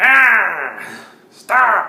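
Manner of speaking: very loud, shrill, screeching, swooping goblin voice. Retelling a fight, the uglier goblin up top screams out, screaming goblin voice. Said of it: "that's a taste of the goblin voice that I had".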